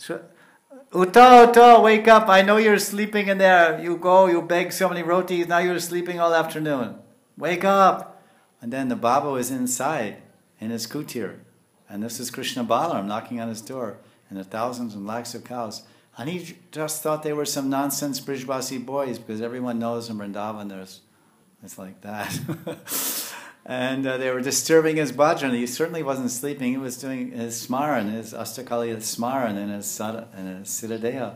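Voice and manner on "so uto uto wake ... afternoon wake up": loud shouting. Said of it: "they would yell and say".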